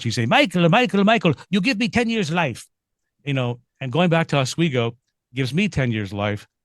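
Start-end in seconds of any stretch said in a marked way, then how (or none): 0.2-2.7 put-on high, broken Polish accent, old grandmother voice. Retelling what a grandmother from the old country always said: imitating grandma's broken Polish accent. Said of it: "in her broken Polish accent".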